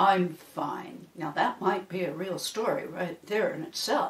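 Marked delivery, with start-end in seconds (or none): 0.0-1.1 moody, sulky, sullen voice. Storyteller giving an example of a simple story exchange, moody voice. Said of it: "(moody voice)".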